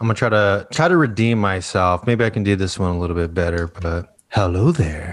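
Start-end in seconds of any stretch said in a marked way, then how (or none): 4.3-5.1 low, sultry, sensual voice. A speaker retries a greeting line to redeem themself, in a sensual voice. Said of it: "sounded like a sensual fig voice".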